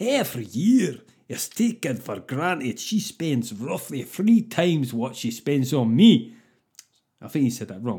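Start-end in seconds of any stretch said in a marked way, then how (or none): 0.0-6.4 deliberately bad, fake, clumsy Scottish accent. Quoting a man's words to the audience, in a bad scottish accent. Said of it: "I'm doing this badly, by the way, just to annoy Scottish people".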